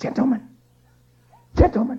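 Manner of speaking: forceful, loud stage whisper that carries. Retelling how he addressed the cheering orchestra, in a loud whisper. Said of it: "almost in a loud whisper".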